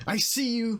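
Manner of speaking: loud, high-pitched, menacing and aggressive shout. Trunge tries to intimidate a huge creature, loud aggressive Trunge shout. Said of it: "says really loud and in a aggressive way".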